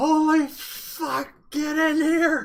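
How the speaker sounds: very high, all-out screamed shout. A player's character calls the others in after seeing a huge creature, shouting as loud as possible. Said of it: "As loud as I can".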